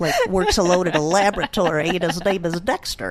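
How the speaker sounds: scientific-sounding voice.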